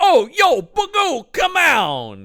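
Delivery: put-on very slow, stock, generic Italian accent. Describing characters in Coming to America, the speaker does a generic Italian guy voice. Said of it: "kind of Italian guy".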